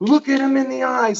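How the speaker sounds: high, insistent yelled voice. Retelling how a teacher pushed them during a regression: imitating someone yelling. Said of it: "yelling at me".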